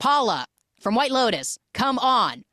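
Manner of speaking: put-on loud, high, fed-up, exasperated outburst. Recounting a man's reply to a woman in a scene, acting out pissed-off. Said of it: "He's like so pissed".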